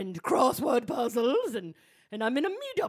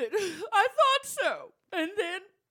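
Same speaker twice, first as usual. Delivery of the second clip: blubbering, much higher; 9 semitones higher than usual. During a podcast bit where a woman is made to cry, blubbering. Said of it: "she's blubbering".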